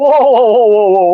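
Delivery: loud, high-pitched, startled, alarmed whoa.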